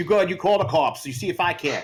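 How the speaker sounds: put-on high, goofy Boston accent. Riffing with the others on a movie reference, the speaker does a dumb Mark Wahlberg Boston accent. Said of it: "We're just doing a dumb Boston accent".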